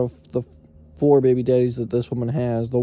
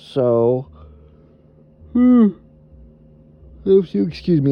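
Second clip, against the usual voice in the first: high, drawn-out words spoken through a yawn; 5 semitones higher, 4 dB louder than usual. Talking about possibly fighting for a son, yawning. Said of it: "I'm yawning".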